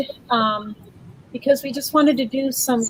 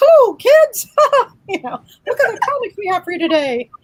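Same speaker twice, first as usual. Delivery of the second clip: loud, shrill, squeaky cartoon voice with swooping pitch; 9 semitones higher, 5 dB louder than usual. Mocking how his own voice sounds on playback, Mickey Mouse voice. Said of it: "it's like listening to Mickey Mouse".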